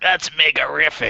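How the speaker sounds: strange, high-pitched cartoon voice. Describing the old cartoon, quoting its hero in a weird Mega Man voice. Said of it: "he's got this weird voice".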